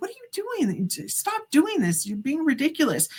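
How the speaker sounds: mock high, swooping yelling. Retelling yelling at dad who is in the bushes acting drunk: retelling yelling at dad. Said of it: "I'm yelling at my dad".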